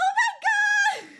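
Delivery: shrill, very high, loud panicked scream. Retelling being chased by a squirrel in Union Square, retelling a panicked scream. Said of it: "I'm like screaming and I'm like".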